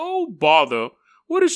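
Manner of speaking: put-on bear voice speaking like a British butler. Imagining how a talking bear might sound, trying a Winnie the Pooh voice. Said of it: "that's like a British butler".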